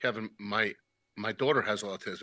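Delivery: acted low, flat, deadpan delivery. Retelling how another speaker told Kevin about his daughter: imitating a deadpan line. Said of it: "you were deadpan the way you said that".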